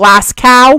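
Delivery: mock American pronunciation. Pronouncing a Scottish city name for fun like an American, American accent. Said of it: "like a true American".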